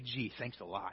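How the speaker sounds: put-on whisper under breath. Acting out a driver taking a speeding ticket: imitating a whisper under the breath. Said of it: "while whispering under your breath".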